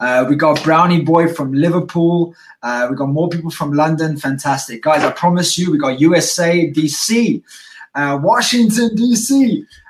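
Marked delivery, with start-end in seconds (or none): 8.2-9.6 high, over-energized, pitched up with too much energy. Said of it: "already I'm getting too much energy".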